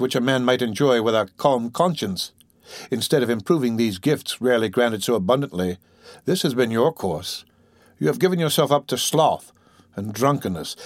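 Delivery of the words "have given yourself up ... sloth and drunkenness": plain reading voice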